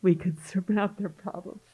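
voice catching with tears. Speaker describing a recurrent dream of flying with others: teary. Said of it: "I'm just getting teary".

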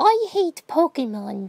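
put-on very high little kid voice. Retelling what a little kid in goggles said when he walked up, in a small child's voice. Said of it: "says in his child voice".

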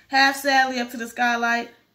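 ordinary delivery, nothing marked

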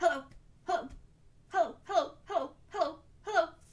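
fast, high, rapid-fire rattled-off hellos. Leading a group hello game, saying hello as fast as we can. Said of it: "Let's say hello as fast as we can".

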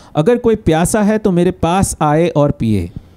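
ordinary delivery

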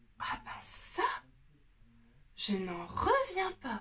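stunned, wondering, amazed outburst. Shown the painter's finished winter landscape, a viewer exclaims in amazement. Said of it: "S'exclama Manon".

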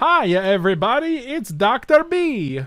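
shrill, booming, high, loud, slow sing-song cartoon voice. During a game, greeting everybody as a cartoon doctor: Dr. Nick impression. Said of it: "It's from Dr. Nick. From The Simpsons".

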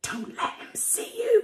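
very high, hissed, hissing voice. Reading a character pulling the narrator behind a stand; hissed. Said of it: "she hissed".

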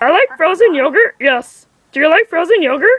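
bad, high-pitched creature voice. Told they do the worst one, the speaker goes into a Fredburger impression.

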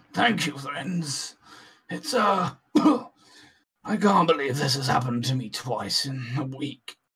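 worn, hurt, battered, injured-sounding character voice. A game master voices a rescued man, still badly hurt, thanking the party. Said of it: "[name]'s still in quite a bad way from the first time you saw him".

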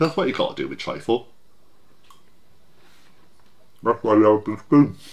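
speaking with mouth full of food. Talking while eating trifle, with a mouth full. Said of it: "Don't speak with your mouth full".

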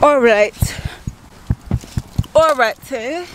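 put-on British-accented voice. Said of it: "That's my British accent".

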